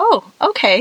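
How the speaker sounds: put-on high, bright little boy voice, like a seven-year-old.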